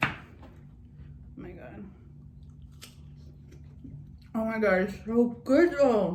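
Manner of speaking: talking with a mouth full of food, chewing. Eating from a bowl and reacting to the food, talking with mouth full. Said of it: "I'm talking to my mouth full".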